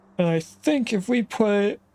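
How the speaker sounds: talking through a yawn. Explaining a plan mid-sentence, yawning while talking. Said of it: "I don't know why I'm yawning".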